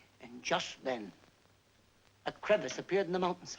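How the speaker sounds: plain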